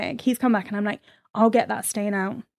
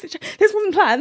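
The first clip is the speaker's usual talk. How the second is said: flustered, caught off guard, high, panicked; 10 semitones higher, 5 dB louder than usual. Retelling spilling something on a man in a shared kitchen, imitating own panicked voice. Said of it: "the panic in my voice was hilarious".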